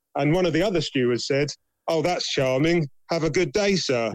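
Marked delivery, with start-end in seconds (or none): 1.8-4.1 play-acted snide, sarcastic, falsely polite tone. Retelling a steward's reply to a brother: imitating a sarcastic steward. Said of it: "Just sarcastic".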